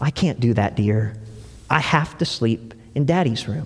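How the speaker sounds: soft, tender, reassuring mother's voice. Telling a story, the narrator voices the mother answering her child, tenderly. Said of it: "she said so tenderly".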